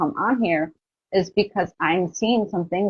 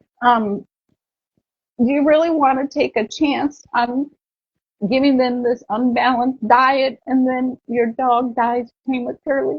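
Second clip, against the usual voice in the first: voice catching, choking up, tearful, pitched up; 6 semitones higher than usual. Remembering the dog that died, the speaker addresses dog owners, choking up, about to cry. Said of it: "I'm gonna cry".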